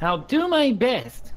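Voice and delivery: shrill, very high, loud cartoon-fighter anime-hero voice. While playing a game with friends, answering in a Goku-style voice. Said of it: "Is that a Goku impression?".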